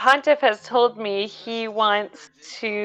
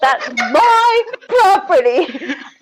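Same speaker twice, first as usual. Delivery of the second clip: shouting, higher and louder; 9 semitones higher, 4 dB louder than usual. Voicing a character who yells at another character: yelling. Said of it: "kinda yell at Strahd and be like".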